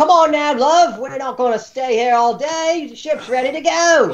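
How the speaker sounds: very high, reedy shout over noise. Calling over the din to players walking up the gangplank, reedy voice shouting. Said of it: "a reedy voice uh, shouting over the din".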